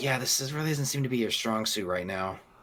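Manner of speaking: soft, half-whispered aside. Voicing a character speaking to a player in a game scene: half-whispering. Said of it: "D B kind of whispers".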